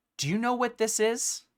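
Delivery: grave, serious tone. Retelling how he holds the rune stone out to each of you: imitating a serious tone. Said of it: "he says in a much more serious tone".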